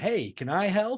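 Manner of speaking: very slow, cheesy, eager, corny hero voice. Describing an idea for the next trailer: cheesy Peter Parker voice. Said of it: "that classic cheesy Peter Parker voice going".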